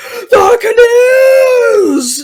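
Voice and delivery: put-on very high, shrill, top-of-the-lungs scream. A player voicing his character mid-fight, screaming at the top of his lungs. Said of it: "screaming at the top of his lungs".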